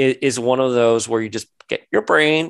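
ordinary delivery

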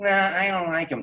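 put-on woman's voice, pitched very high. Comedy story, quoting how everyone does Mitzi: Mitzi voice. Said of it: "whenever they do Mitzi, they do her voice".

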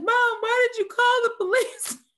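very high, loud, sob-choked crying wail. Retelling what a crying friend said to her mom, imitating someone crying. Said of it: "my friend is crying and she's like".

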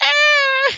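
self-amused laughter in voice. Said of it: "sorry, I'm laughing at myself now".

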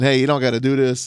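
put-on begging, pleading tone. Retelling a pulled-over player's words to the cop: imitating someone begging. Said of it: "he's begging and pleading".

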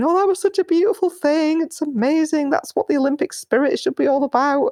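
mock tearful gushing, very high-pitched, almost crying. Retelling what the women in their life said: imitating someone almost crying. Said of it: "almost crying, going".

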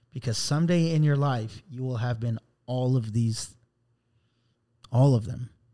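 ordinary talk, nothing marked

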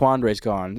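usual speaking voice

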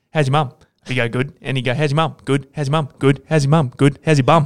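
put-on rapid-fire delivery. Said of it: "he'd do it real quick".

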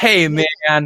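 cheesy, overly friendly, corny delivery. Showing how Kevin Smith says "man": cheesy Kevin Smith "man". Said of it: "it sounds kinda cheesy".

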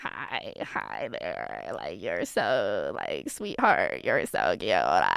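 very low, sing-song, swooping creepy voice. Retelling what a creepy customer said at a fast food place: imitating a creepy guy. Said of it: "there's this creepy guy that comes in".

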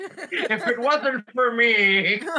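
mock smug, slow, high-pitched boastful tone.

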